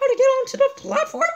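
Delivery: kind and friendly. A woman finishes Harry's hesitant question for him; said kindly. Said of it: "She said kindly".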